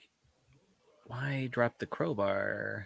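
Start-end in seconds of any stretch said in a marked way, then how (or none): 1.1-2.9 quiet, slow, disbelieving voice. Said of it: "I'm like".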